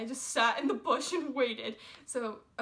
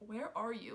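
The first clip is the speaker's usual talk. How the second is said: quiet, soft, hushed half-whisper under the breath; 8 dB quieter than usual. Retelling calling a friend while hiding behind a tree: imitating own half-whisper. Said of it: "whispering so people wouldn't hear me".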